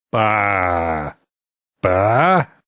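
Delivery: put-on sheep bleating voice. A speaker shows off the sheep voice they've been practicing: bleating sheep voice. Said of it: "I've been practicing my sheep voice".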